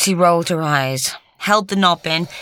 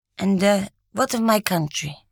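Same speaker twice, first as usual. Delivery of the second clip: ordinary delivery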